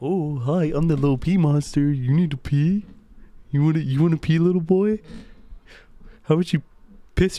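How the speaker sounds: silly, teasing, goofy little cartoon monster voice. Telling of a dream, the speaker voices the little pee monster: pee monster voice. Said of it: "Why do you sound like Grimace?".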